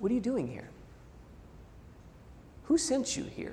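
still, small, hushed voice, near a whisper. Telling a story, the speaker voices the question put to Elijah, still small voice. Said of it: "in a still small voice".

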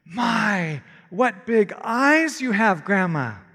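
wondering surprise, slow, drawn-out "My". A girl at her grandmother's bedside speaks up: in surprise. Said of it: "she said in surprise".

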